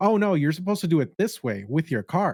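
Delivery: bold, outspoken voice, high pitch. Retelling how a girl at self-checkout told a man how to pay, imitating an outspoken voice. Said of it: "she just had a very outspoken voice".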